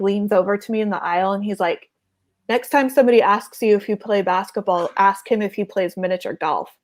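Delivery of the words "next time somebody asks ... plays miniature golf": plain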